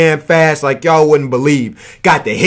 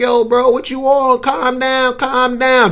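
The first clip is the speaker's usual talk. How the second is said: play-acted, high, pleading voice; 8 semitones higher than usual. Retelling how a man begged someone counting down at him, retelling someone pleading. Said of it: "trying to plead his case".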